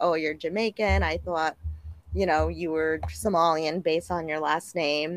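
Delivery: ordinary delivery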